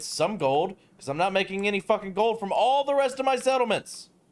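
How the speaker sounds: exasperated, high-pitched, frustrated griping rant. Complaining about running out of gold in the video game: yelling in frustration. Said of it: "I'm yelling about my situation in the video game".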